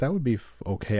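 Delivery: plain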